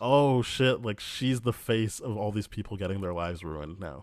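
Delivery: ordinary delivery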